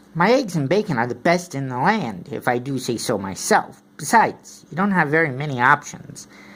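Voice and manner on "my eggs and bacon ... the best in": ordinary delivery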